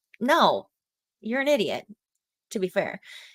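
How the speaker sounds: plain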